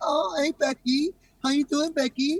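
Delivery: timid, meek voice. Retelling how guys change their voice when a girl walks up, imitating a timid voice. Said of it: "here comes the timid voice".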